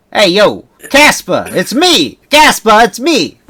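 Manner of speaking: put-on loud, very slow Jersey mafia drawl. Imitating how a guy talks: put-on jersey gangster accent. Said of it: "he talks like a gangster basically or a mafia guy. He's like or like a guy from Jersey maybe".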